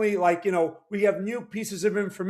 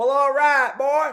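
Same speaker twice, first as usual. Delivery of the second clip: jokey, loud put-on Texas accent; 6 semitones higher, 6 dB louder than usual. Greeting a caller named Sean from Seattle, Texas accent. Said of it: "my my my Texas accent. That's why I'm doing it".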